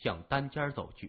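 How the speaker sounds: plain reading voice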